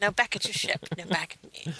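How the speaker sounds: delivered like a commercial pitchman. Joining in a joke about game ads, doing an Old Spice guy impression. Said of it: "We need the Old Spice guy".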